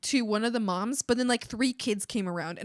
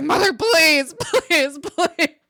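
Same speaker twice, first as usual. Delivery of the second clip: scared, frightened, drawn-out, high-pitched pleading; 6 semitones higher, 11 dB louder than usual. Retelling begging a mother to stop at a potluck: retelling a scared plea. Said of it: "but I was so scared".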